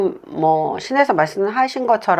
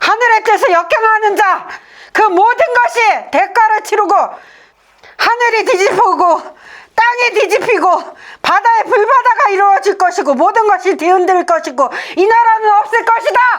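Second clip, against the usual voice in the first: very high, loud, possessed spirit voice; 13 semitones higher, 5 dB louder than usual. Asking the spirits one more time, then answering in a spirit possession voice. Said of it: "신령님들하고 그 영접을 해서 신령님들을 접신이라고 하잖아요".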